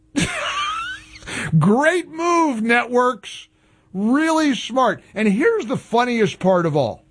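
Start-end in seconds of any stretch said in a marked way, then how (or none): 1.6-5.1 sarcastic, mocking tone. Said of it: "I was being sarcastic".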